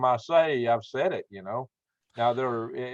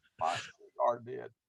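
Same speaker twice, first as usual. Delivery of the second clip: put-on southern politician voice, quieter; 8 dB quieter than usual. Paraphrasing Bill Clinton as a joke: Bill Clinton impression. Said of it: "that's a good impression".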